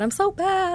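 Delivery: sobbing, teary, pitched way up. Retelling how they cried to their dad back then, imitating crying. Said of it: "I'm crying to my dad".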